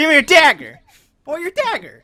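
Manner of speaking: high-pitched put-on voice. Playing a character meant to sound scary, in a high-pitched voice. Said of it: "you have a high pitched voice now".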